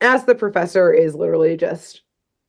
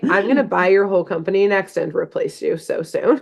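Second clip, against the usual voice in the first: usual speaking voice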